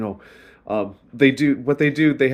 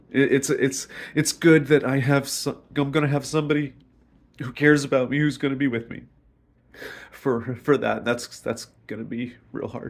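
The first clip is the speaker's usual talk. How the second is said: smiling through tears; 3 dB quieter than usual. Speaking to the camera in their video, crying while smiling. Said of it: "so I'm crying, but I'm also smiling".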